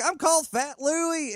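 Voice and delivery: very high, slow, drawn-out southern country drawl. Retelling a comedian's act, imitating Logan Scott Hendry's southern drawl. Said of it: "starts going off with like you know a southern drawl".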